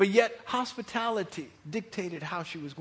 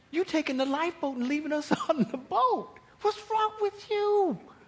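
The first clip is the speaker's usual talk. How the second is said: much higher-pitched, indignant rant. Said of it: "you know she's thinking".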